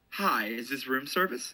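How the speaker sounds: businesslike, businessman-style voice. Role-playing a phone call to the Luxor as the caller: businessman voice. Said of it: "I just tried to sound like I was a businessman".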